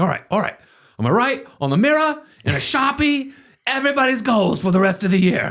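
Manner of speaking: very high, bad put-on British accent. Retelling what a British friend said, imitating Matt's British accent. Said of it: "Your British accent, by the way, is off the chart".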